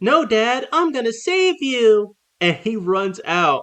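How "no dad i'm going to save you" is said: put-on high, snippy little-kid voice talking back. Retelling a story where a young son runs to save his dad, imitating a snippy little kid. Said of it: "his son gets all snippy and he's like".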